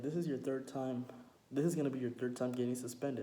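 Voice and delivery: ordinary delivery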